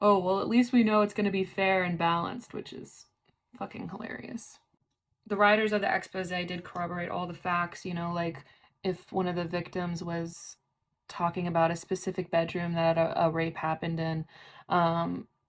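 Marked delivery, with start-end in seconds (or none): 0.0-2.5 dry, tongue-in-cheek sarcastic tone. Quoting an anonymous documentarian on the upcoming doc, imitating a sarcastic remark. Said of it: "he was being sarcastic".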